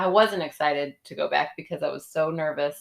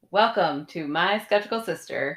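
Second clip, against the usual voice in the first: showy, put-on carnival-announcer podcast host voice; 2 semitones higher than usual. A co-host opens their podcast episode in her put-on podcast voice. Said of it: "I really put on my podcast voice there".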